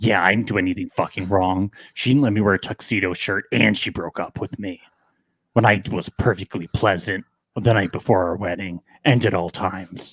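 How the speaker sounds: deep, low, heavy put-on voice. Speaker talks about his ex Natalie: Batman-like put-on voice. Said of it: "What is this voice?".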